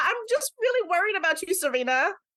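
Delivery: put-on fretting Brooklyn accent. Imitating Molly speaking to Serena, with Molly's Brooklyn accent. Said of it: "Molly was from Brooklyn".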